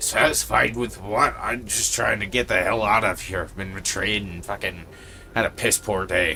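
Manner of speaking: loud, fast, gruff creature voice. Voicing a spider answering from behind rustling webs, in a gruff voice. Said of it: "you kind of hear a gruff voice just say".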